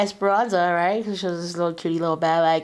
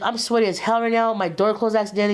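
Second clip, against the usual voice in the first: ordinary talk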